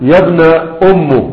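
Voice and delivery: ordinary talk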